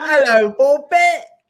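put-on London accent. Greeting the co-host back playfully: put-on London accent. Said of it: "You sound like you're from London".

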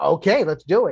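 ordinary talk

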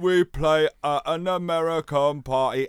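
loud, very slow big British voice. Retelling own band playing at an American teen party: imitating own big British voice. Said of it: "my big British voice".

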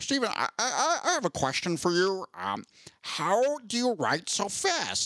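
slow, swooping, high-pitched delivery. Retelling a joint talk between two authors: George R R Martin impression. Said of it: "that was a pretty good George R R Martin que-, uh, impression".

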